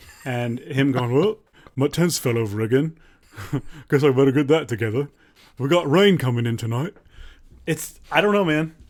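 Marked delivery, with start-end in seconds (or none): 1.1-6.9 put-on British-accented talking-to-camera style. Retelling what a British camping YouTuber from Kent says: imitating his British accent. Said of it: "He's a British guy".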